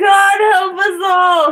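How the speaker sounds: shrill, very high, loud shout. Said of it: "Sorry for yelling".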